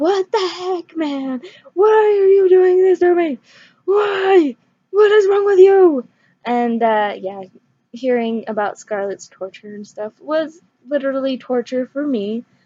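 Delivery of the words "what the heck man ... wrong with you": high, loud, frustrated, exasperated yell. Retelling reacting to a kidnapping in a book: imitating screaming at a book. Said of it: "screaming at the book".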